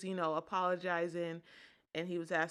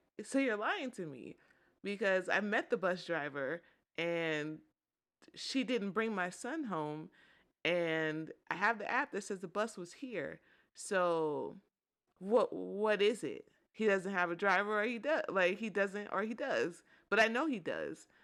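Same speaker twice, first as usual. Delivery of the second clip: ordinary talk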